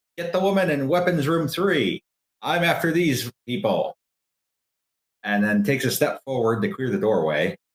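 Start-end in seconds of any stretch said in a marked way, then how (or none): 0.2-4.0 high-pitched shouting voice. A game master voices a guard calling to his buddy, yelling. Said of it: "And he yells to his buddy".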